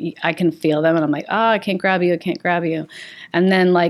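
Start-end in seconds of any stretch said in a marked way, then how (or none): none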